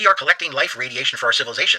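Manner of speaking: ordinary talk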